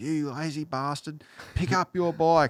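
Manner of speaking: mock high, scolding, angry yelling and screaming. Retelling how the father came running over: imitating his father yelling. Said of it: "yelling and screaming at me".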